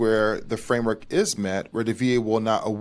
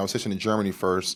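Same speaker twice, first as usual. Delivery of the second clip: ordinary talk, nothing marked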